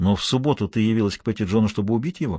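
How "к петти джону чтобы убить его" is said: ordinary delivery, nothing marked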